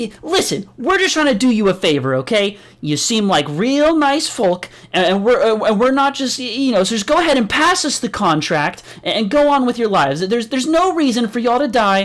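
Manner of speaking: high, very angry, upset, bursting-out ramble. Voicing a character who finally bursts out: angry outburst. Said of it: "bursts out very angrily".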